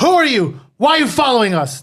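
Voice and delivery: threatening, intimidating voice. A game player's character confronts the guy on the ground, intimidating. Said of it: "I use intimidation for fourteen to be like".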